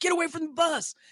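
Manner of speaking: mock big bouncer hollering, shrill security-guard yell. Retelling a big security guard yelling at them by a tour bus, imitating the yell. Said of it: "like yelling".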